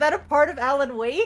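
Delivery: put-on confused voice. Retelling own earlier question, retelling own confusion. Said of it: "I was so confused".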